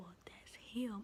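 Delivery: mock whispering. Retelling what they said to someone about a caller, the speaker is retelling a whisper. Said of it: "and I was whispering it just like this".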